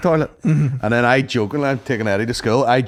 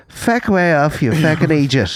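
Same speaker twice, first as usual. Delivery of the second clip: slow, mock grave, dead-serious spokesperson tone; 3 semitones higher than usual. Retelling a representative's reply to a press request, quoted in a mock-serious voice. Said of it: "in a really serious voice".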